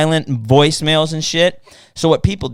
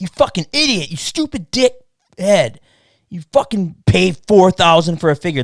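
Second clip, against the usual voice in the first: mock hostile, aggressive, insulting rant; 4 semitones higher than usual. Telling Rob about discouraged buyers who lash out, imitating an aggressive insult. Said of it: "some of them get aggressive".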